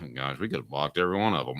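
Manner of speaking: very low, hushed, quiet mutter under the breath. Retelling a press conference answer: imitating Phil Fulmer muttering under his breath. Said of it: "under his breath".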